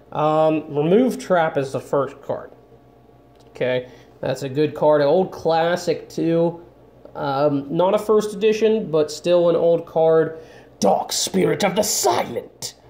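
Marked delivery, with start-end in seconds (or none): 10.8-12.7 anime villain voice with swooping, swinging pitch. Opening card packs for viewers, reading a card name in a Bakura impression. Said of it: "that's a really good Bakura impression".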